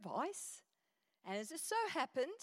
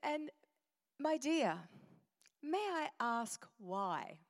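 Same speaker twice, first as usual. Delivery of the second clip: slow, nice, pleasant voice. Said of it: "she spoke so nicely".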